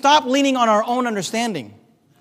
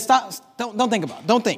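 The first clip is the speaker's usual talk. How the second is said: ordinary talk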